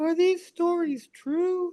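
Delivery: high little voice. You retell what a man asked after looking through the magazines you gave him, imitating his little voice. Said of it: "in his little voice".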